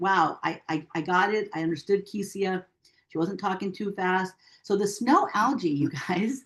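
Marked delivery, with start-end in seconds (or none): none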